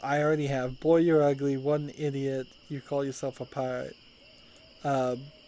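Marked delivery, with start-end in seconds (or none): none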